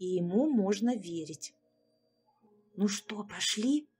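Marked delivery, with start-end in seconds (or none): 2.8-3.8 hushed whispering. Narrator reading a character quietly asking a friend whether to go, whispered. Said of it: "шепотом спросил друга Андрей".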